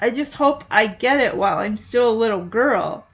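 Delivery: ordinary delivery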